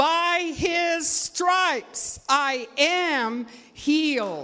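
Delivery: bold, loud conviction. Leading listeners to repeat a phrase louder, now saying it with conviction. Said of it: "Say it like you believe it".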